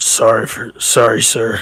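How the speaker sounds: speaking with a grunt. Playing a character apologizing to a man staring hard at him, grunting apology. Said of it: "I kind of grunt".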